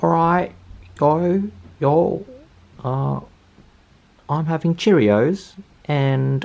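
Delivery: terrible put-on British accent. Talking to the guys on day three, put-on british accent. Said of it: "I'm going to do this in a British accent".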